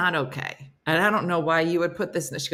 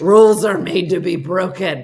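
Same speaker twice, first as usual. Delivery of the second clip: loud put-on drunk, sloshed party-animal voice; 8 dB louder than usual. Introducing the persona after "here comes drunk Patty": drunk Patty voice. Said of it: "That's the voice I use for her".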